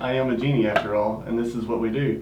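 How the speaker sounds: ordinary delivery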